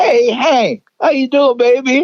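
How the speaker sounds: very high, yelled, hollering. Retelling a guy in the crowd calling out on stage: imitating a guy yelling. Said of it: "some guy yelled".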